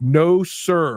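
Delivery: stern, no-nonsense, firm, loud, high. Retelling the guy beside the signer refusing a request, retelling a firm, loud no. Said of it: "very firmly and very loudly says".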